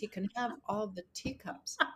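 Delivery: whispering voice. Retelling what was whispered to a lawyer in court: retelling a whisper. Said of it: "and I whispered to my lawyer".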